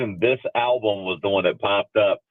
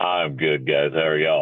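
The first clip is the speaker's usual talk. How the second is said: extra deep voice, much lower pitch; 6 semitones lower than usual. Greeting the others after just waking up, with an extra deep voice. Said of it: "Your voice sounds extra deep today".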